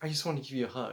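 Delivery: mock tearful speech, close to crying. Retelling how she thanked him after his words: imitating someone about to cry. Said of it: "about to cry".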